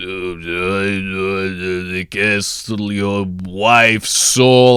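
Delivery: very slow grumbly drawl, "the" stretched long. Reviewing Nosferatu's hard-to-hear lines, doing a grumbly Count Orlok impression. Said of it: "the couple lines just felt too grumbly".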